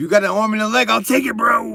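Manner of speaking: clumsy, high, loud cartoon raccoon voice. Speaker jokingly begging for money, bad Rocket Raccoon voice. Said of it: "That was a bad Rocket Raccoon voice".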